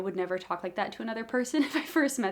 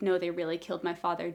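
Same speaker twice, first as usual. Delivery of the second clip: expressionless, completely straight, flat deadpan delivery; 3 semitones lower than usual. Demonstrating a scene partner sticking to the bit, deadpan.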